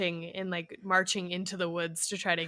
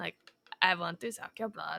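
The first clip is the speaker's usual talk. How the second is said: put-on Transylvanian accent. Showing how a performer you admire crushes it, with a Count Dracula-style Transylvanian accent. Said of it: "Like total Transylvanian, you know, accent".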